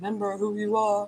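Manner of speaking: booming cinematic delivery. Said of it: "I sound like Lion King".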